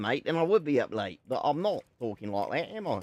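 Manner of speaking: loud, put-on Australian accent. Joking that a viewer thinks they are Australian: put-on Australian accent. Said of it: "if I talk like this".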